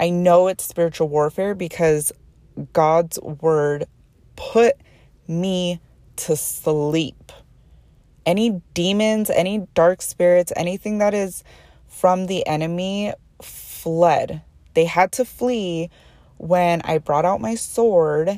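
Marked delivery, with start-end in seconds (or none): 0.0-14.4 speaking while fighting back tears, near tears. Speaker shares a personal experience while trying not to cry, holding back tears. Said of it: "I'm trying hard not to cry right now".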